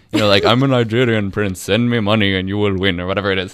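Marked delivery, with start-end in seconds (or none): 0.4-3.0 put-on Indian accent throughout. Acting out a scam message in a put-on indian accent. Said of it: "That was an Indian accent".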